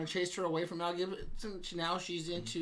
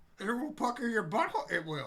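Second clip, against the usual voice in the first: put-on wise alien voice, higher; 4 semitones higher than usual. Answering what a sour beer will do, as asked: Yoda voice. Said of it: "you must use your best Yoda impression".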